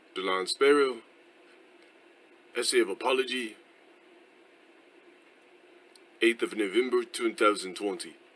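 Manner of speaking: very bad, exaggerated fake English accent. Man opening his written essay of apology: worst English accent ever. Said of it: "the worst in- English accent I've ever heard".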